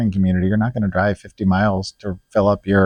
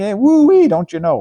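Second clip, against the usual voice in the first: put-on very high mixed Brooklyn and Cajun accent; 12 semitones higher, 4 dB louder than usual. Describing a man's odd accent to another speaker, imitating him in a new york cajun accent. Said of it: "he's got this kind of this kind of Brooklyn thing going on".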